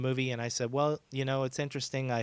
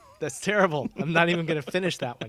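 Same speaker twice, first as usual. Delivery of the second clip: ordinary talk, nothing marked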